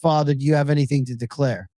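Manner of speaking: ordinary talk, nothing marked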